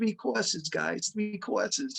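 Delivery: put-on insistent New York accent. Remembering Monty calling the band, doing Monty's New York accent. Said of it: "in his New York accent".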